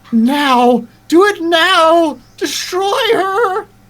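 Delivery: very high, very slow, shrill, drawn-out screaming. Voicing a voice in a player's ear, urging an attack: screaming. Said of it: "the voice is screaming".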